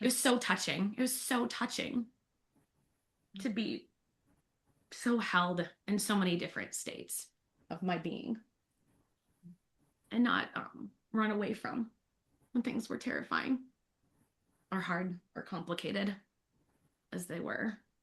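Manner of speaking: choked-up, halting, tearful voice on the verge of crying. Thanking people for cheering her on, close to tears. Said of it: "I'm gonna cry again".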